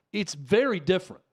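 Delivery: ordinary delivery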